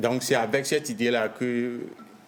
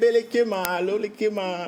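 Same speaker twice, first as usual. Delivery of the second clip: put-on babyish voice, pitched much higher; 10 semitones higher, 4 dB louder than usual. Giving an example of talking in a baby voice. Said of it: "la voix du bébé".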